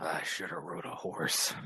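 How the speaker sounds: barely voiced, whispered mumble to oneself. Voicing a character stepping out of a truck, mumbling to himself. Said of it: "just mumbled to himself".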